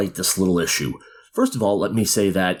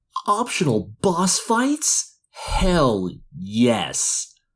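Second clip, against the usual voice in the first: very slow, sneering, condescending, pitched-up mocking drawl; 6 semitones higher than usual. Reading a video headline aloud: mock condescending soy boy tone. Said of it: "in my most condescending, mocking, soy boy tone of voice".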